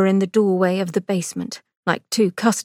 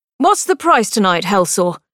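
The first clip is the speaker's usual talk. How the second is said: loud, raised voice calling over; 5 dB louder than usual. Narrator reads Victor asking the morgue attendant, in a raised voice. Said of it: "asked the morgue attendant in a raised voice".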